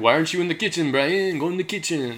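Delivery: comic, laid-on, high put-on French accent. In a chat about the name brian, saying a line in a french accent. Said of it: "you can do a good French accent".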